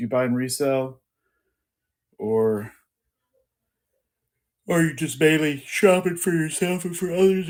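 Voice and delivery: talking through a yawn. Asking a guest whether they resell, yawning while talking. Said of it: "I'm still yawning".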